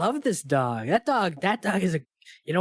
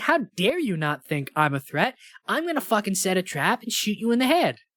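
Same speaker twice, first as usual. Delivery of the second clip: acted-out insulted, outraged, pissed-off indignation; 3 semitones higher than usual. Acting out a film character who feels dismissed: imitating an offended, pissed character. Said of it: "she's offended".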